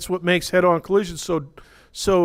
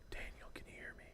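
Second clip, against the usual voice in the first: whisper, much quieter. Explaining the speed of sound, speaker demonstrates a whisper to a listener. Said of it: "If I whisper like this".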